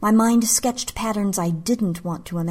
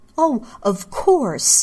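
sharp, high, snapped retort; 5 semitones higher, 4 dB louder than usual. Narrating a story, a woman answers her lover; snapped. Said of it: "snapped Misa".

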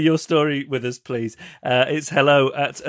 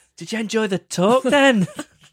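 clingy, needy, higher-pitched voice; 6 semitones higher than usual. Mocking how John asked if people enjoyed the talk, imitating John being needy. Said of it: "That's just him being needy".

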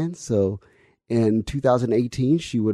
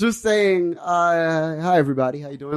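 put-on elderly old lady voice, drawn-out "hi"; 7 semitones higher than usual. Showing the voice they imagine, their grandmother's age: 91-year-old voice. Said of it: "this 91-year-old voice who's lived and seen the world".

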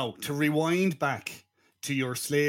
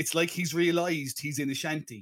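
normal talking voice

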